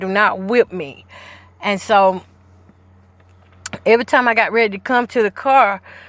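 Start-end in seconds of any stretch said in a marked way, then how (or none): 0.0-1.0 acted, pleading voice. Retelling begging the one who threatened a whipping, reenacting a plea. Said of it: "I'm pleading with her".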